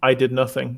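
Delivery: dry, deadpan, flat and level. A player's character, told he's hiding something, looks him in the eyes, deadpan. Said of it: "and like deadpan say".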